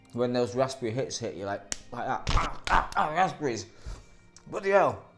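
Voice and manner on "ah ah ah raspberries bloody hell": put-on northern English accent. Talking about Swizzles Matlow raspberry sweets, voicing the reaction in a northern English accent. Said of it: "we can say it in a northern accent".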